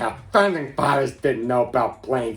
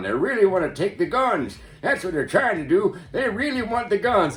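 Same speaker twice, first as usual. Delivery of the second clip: put-on old grandfather voice, pitched up; 7 semitones higher than usual. Retelling what a grandfather used to say about guns: imitating a grandfather. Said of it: "you'd have that one grandfather going".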